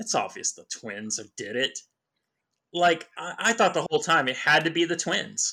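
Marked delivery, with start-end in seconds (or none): 0.0-1.8 low, smug, self-satisfied know-it-all tone. Recalling betting all his money on the twins, retelling a smug remark. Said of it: "I was sitting there smugly going".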